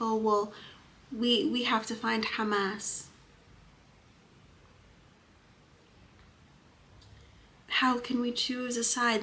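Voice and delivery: put-on scornful, derisive, dripping with sarcasm. Talking about Gaza civilians, sarcastically mimicking some people. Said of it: "I just want people to really recognize my sarcasm".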